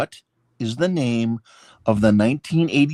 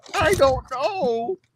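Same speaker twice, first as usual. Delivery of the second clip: put-on very high, pitched-up child voice. Retelling a scene where his mom asks where he was: Chris voice. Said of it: "You do a really good Chris".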